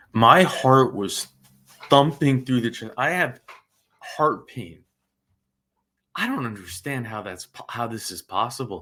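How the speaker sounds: very low voice, angry outpouring. Right after a parole grant is announced, the speaker vents: very angry. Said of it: "I am so angry right now".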